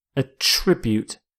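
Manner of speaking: attribute, stressed on second syllable -TRIB-. Teaching cause-and-effect vocabulary, introducing the first word: attribute, stress on second syllable. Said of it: "you stress the second syllable".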